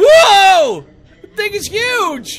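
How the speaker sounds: very loud voice crack, drawn-out cracking whoa. Reacting out loud to a video while watching it: voice cracking. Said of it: "My voice cracked on that one".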